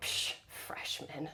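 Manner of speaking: quiet mutter under the breath. Retelling a remark made behind a classmate: imitating a mutter under breath. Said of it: "under my breath".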